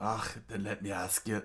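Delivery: put-on Scottish accent. Giving a character the scottish voice he chose, in a scottish accent. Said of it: "Go with the Scottish voice here".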